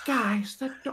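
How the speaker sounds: whisper shout. Calling out in character to companions who have vanished: whisper shout. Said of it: "whisper shout, like".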